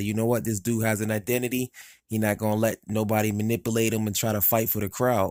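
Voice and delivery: ordinary talk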